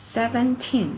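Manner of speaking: put-on seventeen with stress on the last syllable -teen. Indonesian lesson on English numbers, seventeen: stress on last syllable 'teen'. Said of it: "yang harus Anda stres, Anda emphasize, Anda tekan itu adalah uh, silabel atau suku kata yang terakhir".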